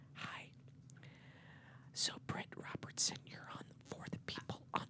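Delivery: breathy, whispered, soft-spoken radio host voice. Demonstrating a way of talking the other speaker finds uncomfortable, soft-spoken voice. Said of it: "you talk like this".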